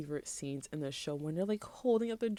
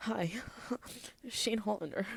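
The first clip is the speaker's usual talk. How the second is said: put-on shy voice, higher, quieter; 3 semitones higher, 4 dB quieter than usual. Retelling Shane greeting his crush, imitating Shane's shy greeting. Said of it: "he's just so like shy".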